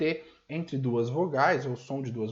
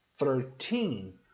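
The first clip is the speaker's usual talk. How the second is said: put-on thirteen with stress on the final syllable -teen; 3 semitones lower than usual. English lesson on number stress: stress on -teen in thirteen. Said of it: "o estresse, está no final da palavra".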